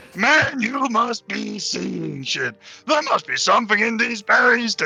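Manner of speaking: shouting loudly. In an audio drama, a character yells at a companion who is trying to read, shouting loudly. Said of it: "You're so loud!".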